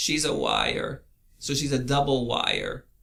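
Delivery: creaky voice, L of "liar" said as W. Explaining a pun by saying it as the cartoon hunter: Elmer Fudd voice. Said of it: "he doesn't pronounce his L's".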